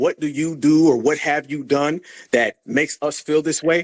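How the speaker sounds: normal talking voice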